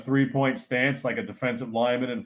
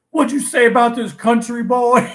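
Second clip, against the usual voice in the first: put-on scream, pitched higher and louder; 10 semitones higher, 6 dB louder than usual. Retelling a friend screaming at a janitor: imitating someone screaming. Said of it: "Lenny's screaming at the Haitian janitor".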